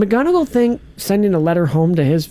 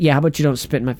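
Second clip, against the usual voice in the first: ordinary delivery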